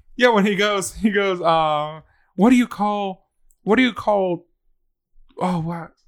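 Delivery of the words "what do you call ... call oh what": put-on little boy voice, fumbling. Retelling the dad-jokes TikTok with the little boy: imitating the dad-joke TikTok boy. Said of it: "sound like that TikTok with the, of the dad jokes".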